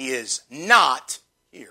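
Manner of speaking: very heavy, capital-letters stress on the word "not". Notes have the word in capital letters: strong stress on not. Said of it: "I like to emphasize that word not. ... Emphasizing that word not".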